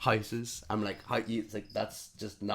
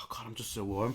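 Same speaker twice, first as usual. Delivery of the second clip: put-on woman muttering to herself; 3 dB quieter than usual. Retelling how a sweating woman kept talking to herself: imitating a woman talking to herself. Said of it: "just talking to herself".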